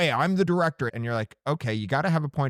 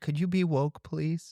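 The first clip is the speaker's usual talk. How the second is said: mild, soft, gentle and polite, nothing tough; 3 semitones higher, 3 dB quieter than usual. Trying out a softer way to ask for it, a little softer. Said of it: "Does woke need to be a little softer".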